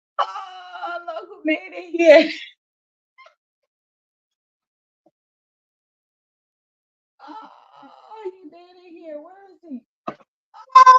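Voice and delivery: shouting. Greeting someone who just arrived, yelling. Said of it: "What are you yelling?".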